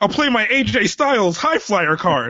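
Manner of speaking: put-on American child voice. Imitating American kids at a card game: imitating American kids. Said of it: "I can't wait to see those American kids like".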